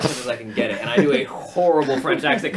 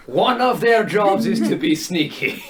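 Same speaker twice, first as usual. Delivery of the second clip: put-on terrible French accent with Scottish accent underneath; 4 semitones higher than usual. Trying a Scottish person doing a French accent, in the worst Scottish-French accent ever. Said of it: "In the worst Scottish French accent ever".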